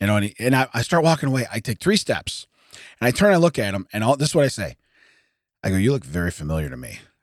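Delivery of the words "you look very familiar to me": mock smirking tone, much lower, quieter. Speaker retells what they said to a man while walking away, retelling a smirking line. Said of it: "i am smirking".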